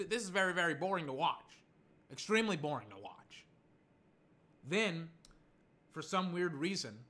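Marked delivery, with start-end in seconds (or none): none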